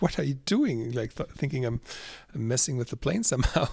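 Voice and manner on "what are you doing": put-on startled, alarmed, shocked tone. Retelling how a flight attendant reacted to a clip on the plane: imitating a shocked flight attendant. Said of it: "she was shocked".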